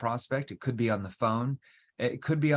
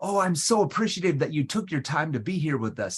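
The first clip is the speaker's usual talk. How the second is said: pushy, overly excited salesy tone, high and rushed; 5 semitones higher, 4 dB louder than usual. Showing a tone that comes across aggressive: overly excited, salesy tone. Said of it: "if your tone comes across aggressive... you're overly excited. You're really salesy".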